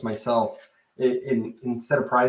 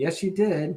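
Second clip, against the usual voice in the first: mock condescending voice, pitched up; 7 semitones higher than usual. Speaker acts out how the listener would answer them, in a mock-condescending voice. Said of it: "in that kind of sort of condescending voice".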